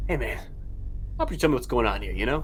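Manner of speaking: put-on chummy, casual, cool-guy older cop voice. Acting out an older officer questioning a suspect in interrogation: playing an older interrogating officer. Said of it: "the classic, like".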